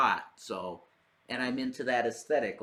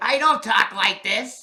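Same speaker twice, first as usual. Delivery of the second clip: very high, very loud squeal; 10 semitones higher, 10 dB louder than usual. Insisting he doesn't talk like the character: Little Nicky voice. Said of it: "Didn't Little Nicky talk like that?".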